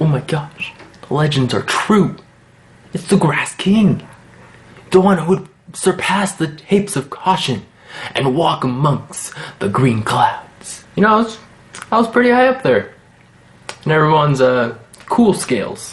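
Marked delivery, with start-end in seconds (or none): 0.0-10.8 put-on whispering voice. Retelling what people at lunch said as he walked: imitating people whispering. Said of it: "I hear some people, like, whispering".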